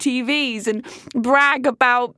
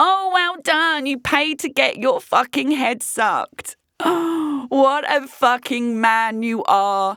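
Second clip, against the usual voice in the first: scornful, heavily mocking, sarcastic delivery. Mocking a man who brags about paying for sex; sarcastic. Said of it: "this is sarcasm".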